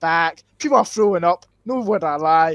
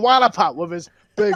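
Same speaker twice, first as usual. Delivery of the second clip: normal talking voice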